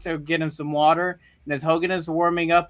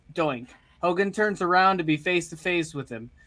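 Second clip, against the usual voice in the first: plain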